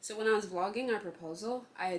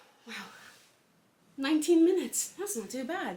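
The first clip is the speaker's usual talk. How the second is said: winded, breathless, high and loud; 8 semitones higher, 8 dB louder than usual. Wrapping up a camera recording after nineteen minutes, out of breath. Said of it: "I'm out of breath".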